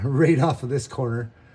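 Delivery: loud, laughing giggle through the words. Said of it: "Can't say it without laughing".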